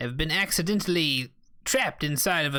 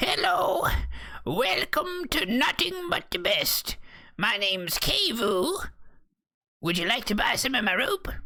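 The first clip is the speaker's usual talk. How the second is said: put-on high-pitched old lady shopkeeper voice; 7 semitones higher than usual. Voicing a spindly older lady running a rope stall: old lady shopkeeper voice. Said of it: "a spindly older lady. She says".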